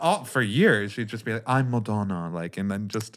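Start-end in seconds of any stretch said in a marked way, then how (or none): 1.5-2.3 put-on British accent. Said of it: "I'm just gonna try on this British accent".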